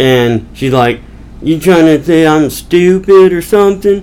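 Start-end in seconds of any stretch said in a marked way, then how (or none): 1.4-4.0 put-on hillbilly Southern accent. Retelling a woman's argument with a rug seller, in a redneck southern accent. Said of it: "she's got like a redneck southern accent to her".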